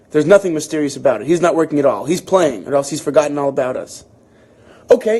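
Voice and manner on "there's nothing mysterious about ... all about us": usual speaking voice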